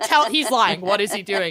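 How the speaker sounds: ordinary delivery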